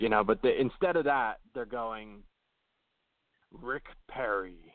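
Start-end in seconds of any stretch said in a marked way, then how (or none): 3.5-4.5 hushed, dark movie-trailer narrator voice. Mimicking how they would announce a name, in a movie trailer voice. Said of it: "like the movie voice".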